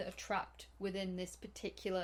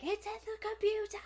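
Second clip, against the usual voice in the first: very high, frantic, panicked freak-out; 14 semitones higher, 7 dB louder than usual. Retelling a scene where one of the guys loses it, retelling someone losing it. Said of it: "one of the guys loses it".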